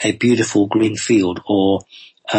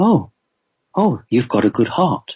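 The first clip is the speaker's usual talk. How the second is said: mock, quite surprised, taken-aback tone; 3 semitones higher than usual. Retelling what he said on reaching your heart, in a retold surprised voice. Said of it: "he said in a quite surprised voice".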